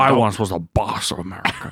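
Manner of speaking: mock elderly politician voice. Joining the bit as a troll: Richard Nixon voice. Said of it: "Richard Nixon all of a sudden".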